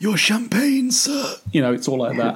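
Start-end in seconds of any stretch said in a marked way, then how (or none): 0.0-1.3 put-on whispering voice, higher pitch. Describing a henchman who can only talk quietly: imitating Whispers' quiet voice. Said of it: "who can only talk like this".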